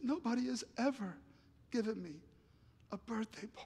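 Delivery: mock crying, high, halting, voice breaking mid-phrase. Retelling what a friend said while crying at his party: imitating someone crying. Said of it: "he just started crying and bawling".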